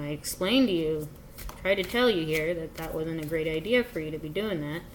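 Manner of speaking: ordinary talk, nothing marked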